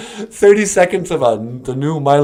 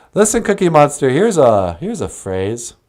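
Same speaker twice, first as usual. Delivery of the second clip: ordinary talk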